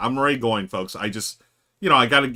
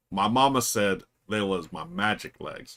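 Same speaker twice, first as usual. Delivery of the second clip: put-on slow Southern drawl, slower; 3 semitones lower, 5 dB quieter than usual. Doing an impression for the audience, Forrest Gump impression. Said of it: "Forrest Gump impression for you folks".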